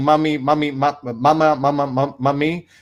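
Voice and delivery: cartoon-character voice looping cut-off, broken repeated words. Comparing the janitor's repeated calling to a cartoon character: Stewie voice. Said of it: "instead of Stewie saying".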